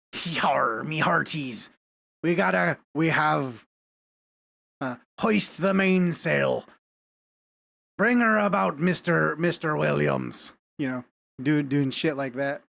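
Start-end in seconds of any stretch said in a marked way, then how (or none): 0.2-10.5 talking like a pirate. A streamer imagines streaming a pirate game, talking like a pirate. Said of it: "talking like a pirate".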